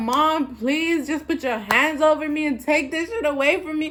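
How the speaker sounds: put-on tearful, crying voice. Recounting being too high, the speaker acts out begging Mom, retelling a crying plea. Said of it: "And I'm crying".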